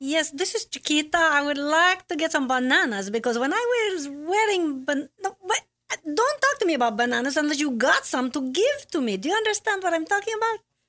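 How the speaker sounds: put-on Central American accented speech. Performing a character in a Central American accent. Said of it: "that's how you do a Central American accent".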